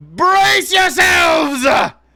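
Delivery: shrill, piercing, very loud, very high-pitched shout. Narrating a game scene, the ship's captain calls out to the players: piercing voice. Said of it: "you hear the piercing voice of the captain".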